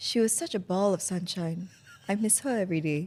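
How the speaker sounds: laid-on, put-on earnest, heartfelt sincerity. Asked to repeat a joke eulogy line, now with put-on sincerity. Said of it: "Can you say it with more sincerity".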